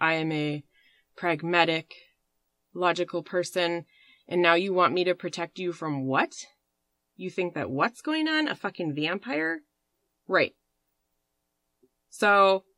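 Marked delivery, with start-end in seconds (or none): none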